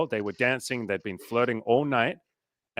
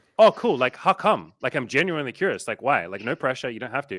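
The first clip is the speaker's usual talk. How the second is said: ordinary delivery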